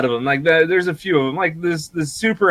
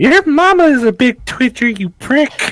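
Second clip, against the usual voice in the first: put-on very high, drawn-out, snotty bratty kid voice; 11 semitones higher, 3 dB louder than usual. Retelling what kids say online to a streamer: imitating a bratty kid gamer. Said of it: "you're gonna get all these little shit kids".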